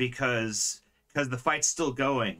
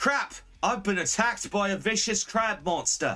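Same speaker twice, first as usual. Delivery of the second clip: put-on Australian accent throughout, pitched up; 8 semitones higher than usual. Voicing a character from Fullbeard Bay; Australian accent. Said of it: "someone in Australia actually said that".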